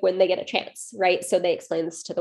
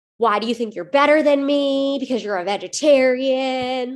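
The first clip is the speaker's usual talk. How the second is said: put-on scream, higher pitch; 5 semitones higher than usual. Retelling how the woman lost it at the table: imitating someone screaming. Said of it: "just started screaming at them".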